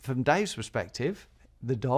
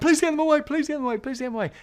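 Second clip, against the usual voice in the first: put-on very high, frightened, terrified pleading; 14 semitones higher, 6 dB louder than usual. Retelling a taxi driver begging for dogs to be taken away: imitating a terrified plea. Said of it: "cowering like a child".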